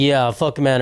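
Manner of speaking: put-on sarcastic tone. Describing a woman answering men's comments on her videos, acting out her mock-sarcastic reply. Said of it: "she's responding sarcastically".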